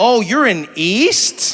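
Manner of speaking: words drawn way out, very slow. Explaining regional pronunciation by imitating locals, drawn-out local inflection. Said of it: "people draw it out".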